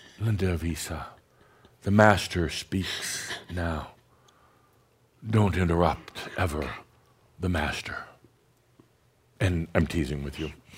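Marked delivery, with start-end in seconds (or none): 0.2-8.0 soft voice, quieter. Showing how theatrics can be subtle, saying a warning: quiet voice. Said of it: "a quiet voice that says".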